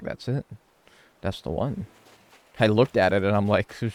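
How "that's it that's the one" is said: whispered, hushed mutter under the breath. Retelling what they muttered to themselves on seeing the shirt, retelling a mutter. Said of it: "I just like muttered to myself".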